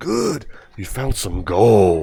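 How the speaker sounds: very slow, swooping sing-song, "gold" drawn out. Comparing game voices, imitating the original game voice actor. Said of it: "Here he goes".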